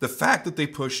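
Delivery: voice breaking mid-phrase. Speaker reviewing a knife, voice cracking mid-sentence. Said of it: "my voice just broke there".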